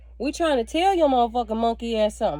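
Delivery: ordinary talk, nothing marked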